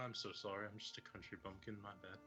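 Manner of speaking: very quiet, sheepish, abashed apologetic tone. A player's commoner character apologizes for staring at a minotaur, abashed. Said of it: "look wholly abashed".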